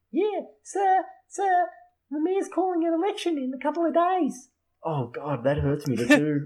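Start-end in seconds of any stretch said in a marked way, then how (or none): 0.1-4.4 put-on very high little Australian boy voice. In a role-play scene, reporting to sir after being urged to keep going: small Australian kid from The Simpsons. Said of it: "you sound like that little kid on The Simpsons".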